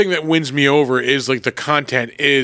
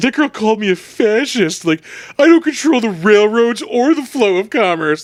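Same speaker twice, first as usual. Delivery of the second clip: high, teary, put-on sobbing voice; 8 semitones higher, 4 dB louder than usual. Retelling a movie scene, the speaker quotes her, imitating Barbie crying. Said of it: "Barbie just sitting there crying".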